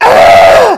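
high, loud, crying villain yell at full volume. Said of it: "to yelling at the top of his lungs".

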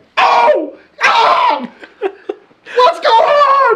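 very high, very slow, drawn-out excited yelling. Showing what they do while playing a silly worm game: imitating the worm game voice. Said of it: "I gotta do the same thing".

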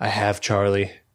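mock low, menacing, threatening voice. Retelling how a character talks to the mom on the phone: imitating a menacing caller. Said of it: "The way he talks to the mom is like".

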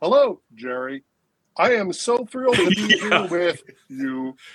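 stiff, canned, animatronic recorded announcement voice. Showing how their earlier greeting sounded, like a Disneyland ride recording voice. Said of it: "It sounded like this".

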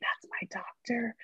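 breathy, soft, hushed, lit-up whisper. Retelling what a daughter whispered on meeting a doctor: imitating a whisper. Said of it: "and then she whispers to me".

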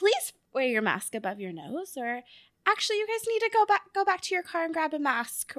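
put-on polite service tone. A restaurant worker showing how staff ask customers to wear masks, retelling polite customer-service voice. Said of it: "we say it very politely in our customer service".

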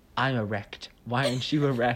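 put-on serious delivery. Recounting a scene and quoting a man's line, retelling in a dead-serious tone. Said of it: "in the most serious tone".

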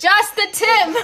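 high, slow, laughing yell. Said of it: "You're yelling that in your house".

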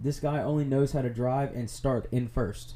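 ordinary delivery

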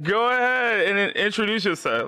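voice breaking and cracking up high. Host asks a special guest to introduce themselves: voice cracking. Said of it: "why did my voice crack right there?".

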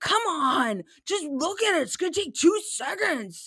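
put-on really mad kid voice. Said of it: "And he's, like, really mad".

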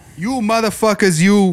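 put-on mobster voice. Doing a Joe Pesci impression for the others: Joe Pesci impression. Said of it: "Is that a good Joe Pesci impression?".

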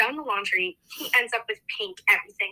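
ordinary delivery

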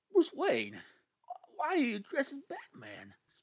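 animated, high, sing-song film-actor voice, pitch swinging up. Quoting a favorite movie line: Christopher Walken impression. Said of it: "let me channel my inner Walken here".

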